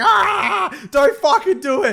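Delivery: mock very high, very slow, stretched-out scream. Retelling yelling at friends during an escape room: imitating screaming. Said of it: "we're just screaming at you".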